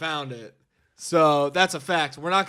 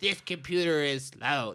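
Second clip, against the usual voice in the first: put-on soft, elderly grandmother voice; 2 semitones lower, 6 dB quieter than usual. Retelling a visit from grandma, imitating grandma's voice. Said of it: "That's my grandma's voice".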